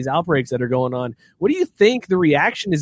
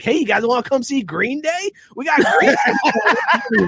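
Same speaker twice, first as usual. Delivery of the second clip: very high-pitched fake Lake Tahoe local accent; 10 semitones higher than usual. Speaker imitating how Lake Tahoe promotes itself, in a put-on Lake Tahoe accent. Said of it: "Do they talk like that in Lake Tahoe?".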